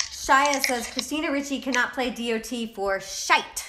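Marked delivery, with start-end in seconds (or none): none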